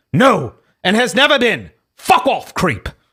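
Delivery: put-on bouncy British accent. Reading an online argument aloud, voicing Jack Buckby in a British voice. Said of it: "I'm going to read Buckby's voice in a British voice".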